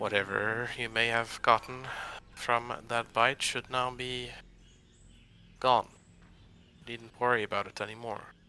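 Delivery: dropped, hushed voice. After casting a spell on him, the character speaks in a lowered voice. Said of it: "kind of in a lowered voice and say".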